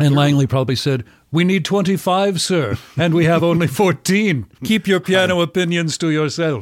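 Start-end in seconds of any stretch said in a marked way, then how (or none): 1.3-6.6 put-on old-fashioned gentleman voice, higher. Imagining what Langley said back to his brother: Langley Collier impression. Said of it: "That's my Langley, uh, Collier impression".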